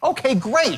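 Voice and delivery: eager, keen tone. Showing how to say a short reply: enthusiastic. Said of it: "Where am I? Enthusiastic, right?".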